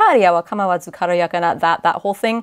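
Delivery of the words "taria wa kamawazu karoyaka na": plain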